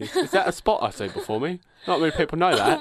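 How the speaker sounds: deliberately bad movie-star voice. Doing a Macbeth line as a terrible Michael Caine impersonation. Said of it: "my terrible Michael Caine impersonation".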